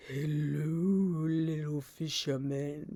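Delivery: very low, sinister, creepy voice, drawn out. Retelling a man's line from an audio clip, imitating a deep voice. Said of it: "he's like got a voice that is deep".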